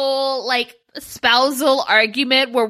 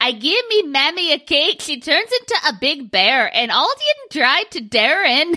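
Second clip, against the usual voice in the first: swooping animated-character voice, words half-garbled; 3 semitones higher than usual. Showing how Merida from Wreck-It Ralph two talks: Merida voice. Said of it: "Merida from Wreck-It Ralph two, and she does this thing".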